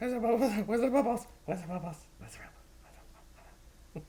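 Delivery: excited high voice. Talking to the dog, excited dog-talking voice, half octave up. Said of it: "half octave and make it sound exciting".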